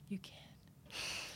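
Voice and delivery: very soft, encouraging, unvoiced whisper.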